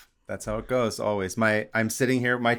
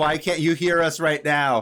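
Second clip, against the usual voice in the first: mock yelling, higher and louder; 6 semitones higher, 5 dB louder than usual. Acting out listeners yelling at the podcast: imitating listeners screaming. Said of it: "Everyone's screaming at the podcast".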